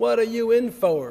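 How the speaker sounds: slow, loud, hardened, put-on Texas drawl. In a joke, a hardened criminal taps a man's shoulder and asks, put-on Texas accent. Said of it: "I think that's how they say it in Texas".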